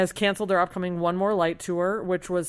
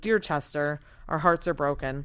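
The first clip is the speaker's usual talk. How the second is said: ordinary delivery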